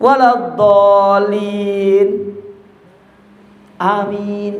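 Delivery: waladhdallin, then a clear pause before amin. Explaining amin should follow the imam closely, showing a gap before amin. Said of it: "itu ada jarak".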